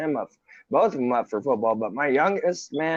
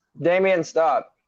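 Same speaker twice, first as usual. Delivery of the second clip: raised, loud yelling; 4 semitones higher, 4 dB louder than usual. Mid-conversation, a parent breaks off to yell at their son: yelling. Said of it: "I'm yelling at my son".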